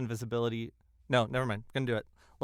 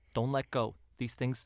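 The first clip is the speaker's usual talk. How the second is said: speaking very quietly, hushed voice. Speaking in character to a held companion, speaking very quietly. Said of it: "I say it as quietly as I can".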